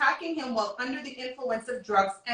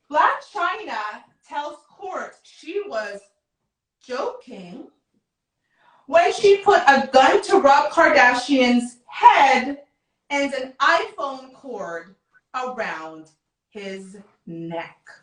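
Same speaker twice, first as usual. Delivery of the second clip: very slow, drawn-out, raised, word-by-word reading; 7 dB louder than usual. Speaker reads a quoted news line aloud to listeners, very slow. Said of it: "I'm going to read this as slowly as possible".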